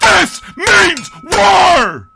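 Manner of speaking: very loud, high, shrill yell, "war" drawn out. Opening the show and joking about how to say a band name: yelling. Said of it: "I come back and I'm already yelling".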